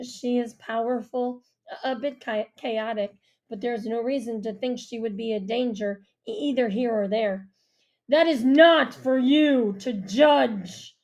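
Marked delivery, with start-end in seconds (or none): 8.1-10.8 harsh-toned, raised, slow and deliberate. Narrating a story, the Earl cuts off another speaker, in a harsh voice. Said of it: "the Earl says in a harsh voice".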